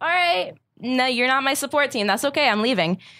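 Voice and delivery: resentful, salty, bitter, dismissive tone. Retelling what they told their boss after being selected: retelling own salty reply. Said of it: "I sound so salty right now".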